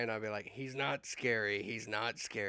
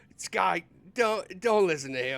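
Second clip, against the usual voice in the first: acted shouting, higher and louder; 8 semitones higher, 9 dB louder than usual. Voicing a character calling across to sky: yelling in character. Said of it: "Beaufort will yell out and go".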